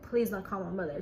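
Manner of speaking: plain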